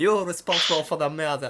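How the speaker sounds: high, over-the-top, exaggerated fake French accent. Showing how to accuse everyone like in the film, in a Pink Panther accent impression. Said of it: "That's a great accent".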